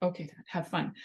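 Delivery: ordinary delivery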